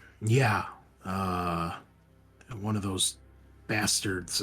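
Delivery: very heavy, leaden, weighed-down voice. Retelling what a man said, turning back to the question, in a heavy voice. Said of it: "kind of with a heavy, heavy voice".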